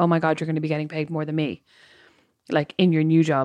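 ordinary talk, nothing marked

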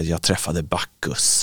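put-on slurred mumbling. Recalling collapsing on the sofa after drinking, retelling a drunken mumble. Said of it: "lägga mig på soffan och mumla och säga".

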